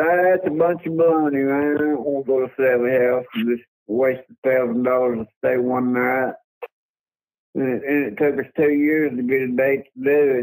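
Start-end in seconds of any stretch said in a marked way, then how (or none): none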